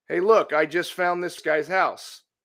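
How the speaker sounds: southern Ohio regional accent. Demonstrating how people talk in southern Ohio, Ohio accent. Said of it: "You see the accent there?".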